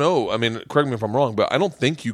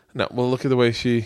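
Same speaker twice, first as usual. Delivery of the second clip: plain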